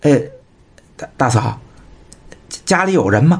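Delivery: halting, stuttering, stammering speech. Reading a novel aloud, a man at a loss for words stammers to a woman. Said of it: "他结结巴巴".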